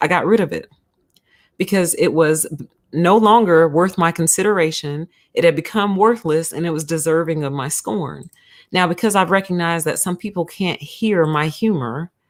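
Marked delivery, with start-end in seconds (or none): none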